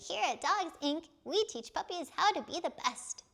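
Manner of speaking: cutesy puppy voice, pitched very high. A voice actor recalls playing a puppy in a dog training school commercial, cutesy little golden retriever voice. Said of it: "very cutesy little golden retriever voice".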